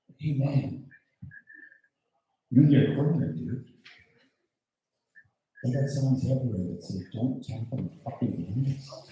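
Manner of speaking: hushed stage whisper, murmured close to ear. Retelling going up to a blind man: retelling a half-whisper. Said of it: "So I whisper in his ear".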